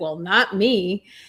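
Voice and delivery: mock, tongue-in-cheek, sarcastic. Retelling own reply in a workshop about boundaries: sarcastic. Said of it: "I sarcastically said".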